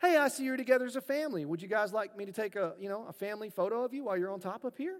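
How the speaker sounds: acted sweetest, most helpful-sounding, friendly voice. Quoting a guy who came over to the family, in the nicest tone of voice. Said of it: "in just the nicest tone of voice".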